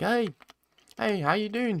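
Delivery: put-on very high, odd, near-American accent. Imitating a fighter whose accent mixes Nigerian and New Zealand: imitating Izzy's weird accent. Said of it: "Izzy's accent is weird".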